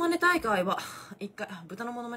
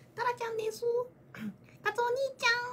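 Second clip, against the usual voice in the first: put-on very high small-child cartoon voice; 12 semitones higher, 4 dB quieter than usual. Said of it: "声聞いたら真似できます".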